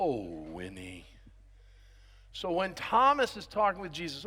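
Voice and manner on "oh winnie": very low, soft, mopey donkey voice. Speaking to a group about Thomas, doing an Eeyore voice. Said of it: "Eeyore talked like this".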